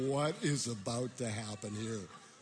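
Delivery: ordinary talk, nothing marked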